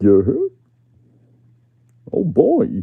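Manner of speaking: very loud, high, wildly swooping cartoon voice. Practising a Goofy impression again: Goofy voice. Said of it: "That's getting better".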